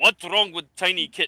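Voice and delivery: big, muscular, huge orc character voice. Voicing a broad, muscular orc looking down at a player: Drog the orc voice. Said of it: "very muscular orc, looking down at you with this big hammer and goes".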